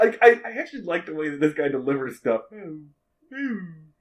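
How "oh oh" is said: puppet-like character voice. Speaker imitates a man's delivery for the co-host, Muppet-like voice. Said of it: "Sounds like a Muppet".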